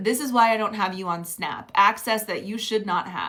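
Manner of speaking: ordinary talk, nothing marked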